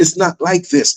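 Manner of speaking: normal talking voice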